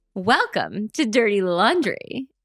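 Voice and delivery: chipper, cheery 1950s commercial voice. Imitating the other speaker reading bios: chipper 1950s commercial voice. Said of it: "you sound a little bit like a nineteen fifties commercial".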